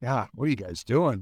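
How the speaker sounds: put-on disappointed sarcastic tone. Describing Bill in the locker room, imitating Bill, mock-sarcastic like a disappointed parent. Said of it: "more of a sarcastic".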